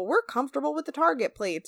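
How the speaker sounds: country bumpkin voice. Retelling a dad's line at dinner to sound like a hick: imitating a hick voice. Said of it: "to make him sound like some kind of fucking hick".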